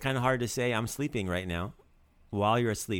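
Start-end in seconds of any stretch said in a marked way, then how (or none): none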